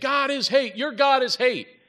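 very high, shrill, loud screaming outburst. Speaker recounts a man yelling from his car window into a church; retelling a scream. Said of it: "He starts screaming".

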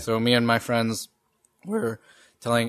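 voice cracking. Speaker recounting a restaurant incident with friends, voice cracking. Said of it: "my voice just cracked".

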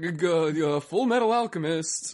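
put-on nervous man voice. Describing the first series as a nervous guy, mock-nervous guy voice. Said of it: "is like a nervous guy. He's like".

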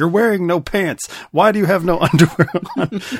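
high, loud, freaked-out yelling. Describing a film scene, acting out a husband freaking out at his wife, retelling a yell. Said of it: "yelling like".

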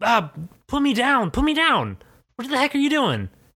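very high, shrill woman's yelling. Voicing a woman grabbed by the neck: woman yelling in character. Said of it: "she sort of yells at you".

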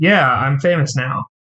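normal talking voice

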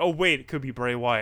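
usual speaking voice

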